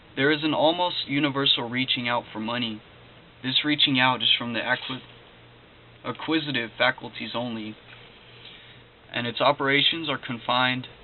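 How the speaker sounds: normal talking voice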